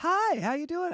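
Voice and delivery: very high, silly, put-on phone voice. Recalling being a good opener, doing his opening greeting in a stupid high voice. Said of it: "I have that like stupid high voice".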